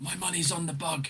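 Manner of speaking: hushed half-whispered aside. Leaning in to a companion while she tries to net a bug; half-whispered. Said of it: "lean in and whisper to whisper to Botch".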